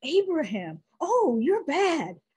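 put-on high, slow, teasing older lady voice. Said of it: "an older woman in church said".

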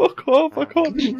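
laughing so hard to the point of tears. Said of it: "My eyes are crying".

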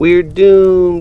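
giggling, laughing, very high. Narrator reading a young fish playing hide and seek with friends: laughing. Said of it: "cried Nemo, laughing".

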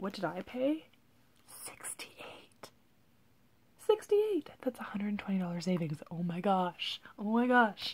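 thrilled, hushed whisper with swooping pitch. Telling what was paid for a clearance wallet: whispering from excitement. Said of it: "Why am I whispering?".

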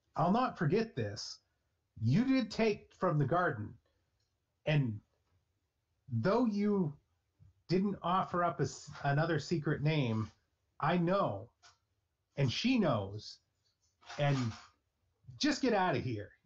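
fed-up, exasperated, angry, frustrated outburst. Narrator voices a frustrated man turning back to the player: yelling angrily. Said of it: "he looks back at you and yells".

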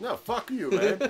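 put-on New York Italian accent. Turning down a friend's request for help, in a weird New York Italian accent. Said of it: "I got really weird New York Italian on that".

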